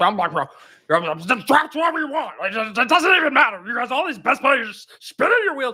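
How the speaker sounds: high-pitched rant, talking around a full mouth. Showing the co-host a Blender impression, mouth full of cashews: Blender impression with cashews. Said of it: "when I did my Blender impression is I put a bunch of cashews".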